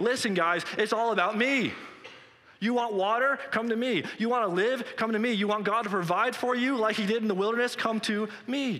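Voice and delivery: high, ringing, loud shout. Retelling the feast scene, the speaker voices Jesus calling to the crowd, imitating Jesus shouting. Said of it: "starts shouting".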